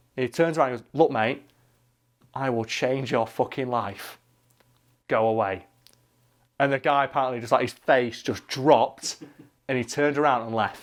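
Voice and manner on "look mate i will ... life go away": slow, quiet, menacing tone. The speaker retells a big guy turning around to warn another man, with quiet menace. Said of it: "delivered with like the kind of quiet menace".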